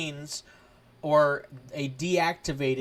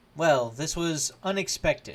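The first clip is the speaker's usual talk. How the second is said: robotic commander droid voice. Voicing a tactical droid commanding officer greeting the players: super tactical droid voice. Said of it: "as he kinda looks down at where his legs used to be".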